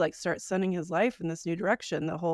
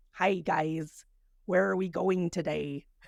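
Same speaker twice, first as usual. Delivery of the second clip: British speaker's put-on, fake American accent. Showing how every Brit sounds trying an American accent: Brit faking an American accent. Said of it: "Every Brit that tries to do an American accent sounds like that".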